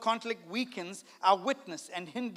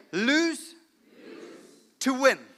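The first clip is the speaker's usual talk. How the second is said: said with full conviction, firm and emphatic; 5 semitones higher, 6 dB louder than usual. Leading the audience in repeating a phrase, said with conviction. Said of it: "Say this with me with conviction".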